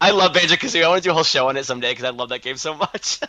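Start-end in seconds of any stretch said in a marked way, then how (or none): 0.0-0.8 high, loud, excited gushing. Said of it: "I get excited".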